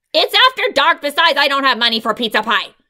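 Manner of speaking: cross, scolding tone. A mother answers her daughter's eager request; cross. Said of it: "answered her mother crossly".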